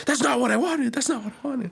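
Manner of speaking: put-on frantic, very high, rushed, repeated panic. Retelling the customer's reaction to the dish: imitating someone panicking.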